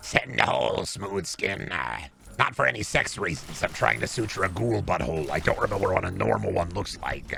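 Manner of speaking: put-on ghoul voice. Acting out a ghoul boyfriend asking Smooth Skin for something: imitating a ghoul boyfriend. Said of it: "my boyfriend on Ghoul Grinder be like".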